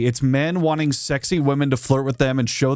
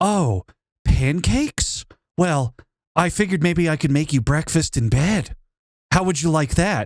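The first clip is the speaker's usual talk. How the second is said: canned, unnatural AI chatbot voice; 3 semitones higher than usual. Showing how an ai chatbot answers a random question: imitating an ai chatbot. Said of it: "if you do it to an A I chatbot, they're gonna go".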